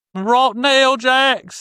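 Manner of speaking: loud frightening impression. Asked to try it again, the speaker does a woman's voice; loud, scary impression. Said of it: "You do something that is loud and scary".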